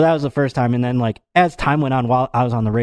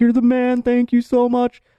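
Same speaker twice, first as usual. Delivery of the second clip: mock groveling tone, pitched higher; 12 semitones higher than usual. Retelling thanking the cop who let them off, imitating groveling. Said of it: "I'm groveling at this point to the cop".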